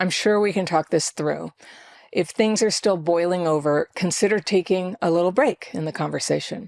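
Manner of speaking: steady, even, level, unhurried calm voice. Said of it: "You can keep your voice steady".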